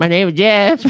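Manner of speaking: highest-pitched squeak, very high and loud. Retelling how Channing Tatum answered a man asking who he was, very high pitch. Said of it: "highest pitch".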